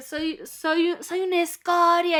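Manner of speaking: mock self-pitying, high, dragged-out shout. Retelling a man who went into victim mode, imitating someone shouting. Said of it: "y empieza así como a gritar".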